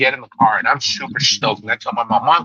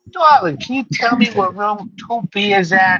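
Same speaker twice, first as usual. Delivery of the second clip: put-on high-pitched old New York lady voice; 8 semitones higher than usual.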